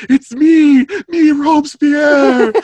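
put-on quivering voice. Retelling how he answers Lamette's question; imitating a quivering voice. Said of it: "whatever you call that kind of voice where you're quivering".

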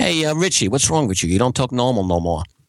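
put-on Long Island New York accent. Retelling what a friend said after the first semester away: imitating a friend's Long Island accent. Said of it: "I'm pretty sure I sounded exactly like that".

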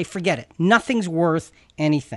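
ordinary delivery

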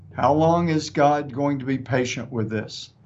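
ordinary delivery

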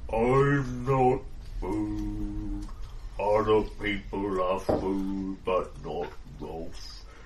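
slow, thick, low, drawn-out voice. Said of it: "exceptionally thick-sounding person".

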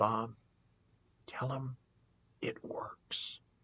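acted, faint, weak, struggling whispered sick voice. Telling of the last time he saw Jack, imitating Jack's struggling sick voice. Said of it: "in his cancer struggling voice".

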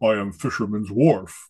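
low, large-sounding voice. Recalling a guy dressed as a Klingon with a rod and reel, deep Klingon voice. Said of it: "had the great deep voice".

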